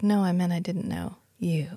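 soft put-on vampire voice. Retelling a film scene where the count declines a dance: softened Dracula voice. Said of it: "the way he softens his voice".

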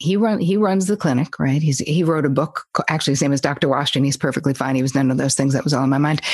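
usual speaking voice

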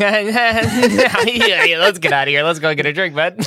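mock nervous laughing, high and slow. Imagining a character dodging someone from his past, Neelix nervously laughing. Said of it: "Neelix nervously laughing".

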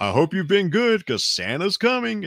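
deep, booming put-on voice. Retelling how Dad called over the patrol car loudspeaker: imitating Dad's loud deep Santa call. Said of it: "'cause this is loud".

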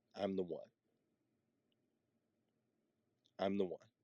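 hushed, soft, repeated half-whisper. Retelling leaning in close to her after the stage: retelling a half-whisper. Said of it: "I just whispered to her".

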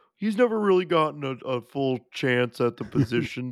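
high-pitched puppet character voice. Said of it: "you're doing like a Muppet".

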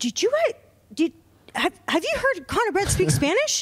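very high, swooping, stunned, disbelieving, shocked tone. Retelling what a media member asked: imitating someone shocked. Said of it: "shocked as all hell".

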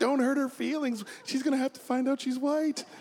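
put-on high-pitched little-girl voice.

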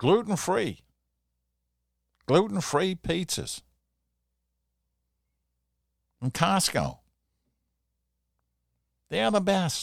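put-on high-pitched poor Newfoundland accent. Retelling what his cameraman buddy said, bad Newfoundland accent, imitating Keith Whalen. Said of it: "That's a really bad Newfoundland accent".

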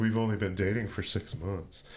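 ordinary delivery

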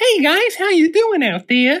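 put-on very high, swooping, babyish baby voice. Introduced as the first person to pitch ideas, greeting the crowd: Baby [name] baby voice. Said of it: "Baby voice is contagious".

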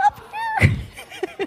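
very high-pitched, squeaky put-on voice. Teasing about how high a voice goes: mock high-pitched voice. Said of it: "How high does your voice go?".

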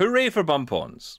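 very high-pitched sarcastic, facetious cheer. Commenting on a company's accessibility spotlight, facetious. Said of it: "I am being facetious".

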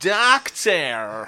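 very loud, belted, bad American accent. Mocking a TV companion's bad American accent: imitating Peri's bad American accent. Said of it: "She's just like".

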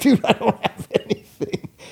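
talking with words broken up by laughter. Recounting a robbery at knifepoint, answering the robber: retelling a laughing reply. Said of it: "And I just started laughing".

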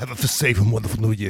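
coked-up sounding voice, pitched low. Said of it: "Can you hear the cocaine in my voice?".

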